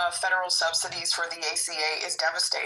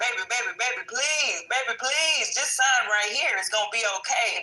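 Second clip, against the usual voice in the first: mock begging voice, higher; 5 semitones higher than usual. Acting out the Republicans as a partner begging to be taken back: imitating a pleading lover. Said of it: "the Republicans are like".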